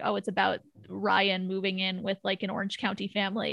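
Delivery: plain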